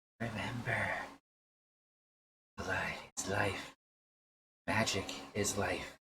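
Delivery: strange, odd, rasping voice. Voicing a voice heard in a character's head: raspy, odd voice. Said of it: "You hear a raspy, odd voice".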